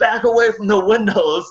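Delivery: high-pitched, loud yelling. Recalling a hailstorm, the speaker quotes a manager retelling a manager's yell at customers. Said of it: "just yelling at the customers".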